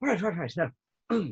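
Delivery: eager, hyped-up, excited character voice. Voicing a character who opens weapon cases: excited NPC voice. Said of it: "very excitedly goes".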